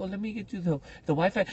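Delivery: put-on Spanish accent. Speaker retelling a hotel lady answering about the wi-fi, imitating a spanish accent. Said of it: "So she's a Spanish lady".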